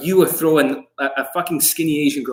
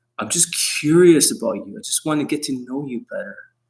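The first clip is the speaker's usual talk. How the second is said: soothing, gentle, comforting, reassuring. Showing how to talk to a girl: soothing comforting tone. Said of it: "see the way I'm saying it?".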